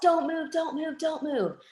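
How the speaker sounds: put-on, very high, screamed yell. Retelling a trainer suddenly screaming a warning: imitating someone yelling. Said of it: "he yells".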